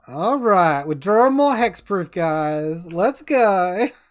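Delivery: obviously fake, sarcastic, put-on cheerful enthusiasm. Reacting to drawing more hexproof cards: put-on sarcastic enthusiasm. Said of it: "Obvious, like, sarcastic, uh, enthusiasm there".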